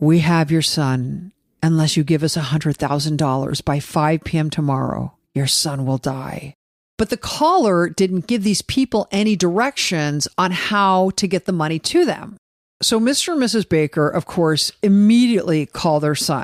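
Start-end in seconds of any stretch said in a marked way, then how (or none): 0.0-6.5 put-on strange raspy voice, lower. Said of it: "a very strange, raspy voice".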